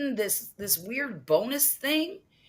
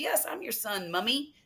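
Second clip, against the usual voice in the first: put-on British accent, mommy said as English mummy; 3 dB quieter than usual. Retelling what a viewer said to her: imitating a british accent. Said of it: "like the British call".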